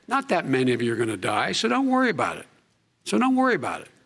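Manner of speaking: mocking, ironic, swooping sarcastic soothing tone. Addressing teachers about reopening schools safely, sarcastic. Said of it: "Was he being sarcastic?".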